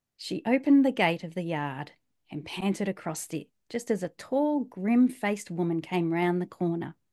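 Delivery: soft, even, quiet neutral narrating voice. Showing how they read a book aloud, in a quiet neutral reading voice. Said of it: "my quiet corner voice".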